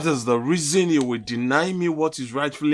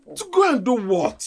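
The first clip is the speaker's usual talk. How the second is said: very high, raised voice; 9 semitones higher than usual. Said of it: "I'm sorry for raising my voice".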